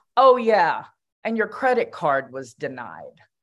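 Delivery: rather harsh delivery with a swooping pitch. Speaker retells what a young woman said to another woman, imitating a harsh voice. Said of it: "again, in a rather harsh voice".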